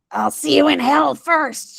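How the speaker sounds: rasping hiss. Reading a story, a woman answers the detective's question, hissing. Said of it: "she hisses".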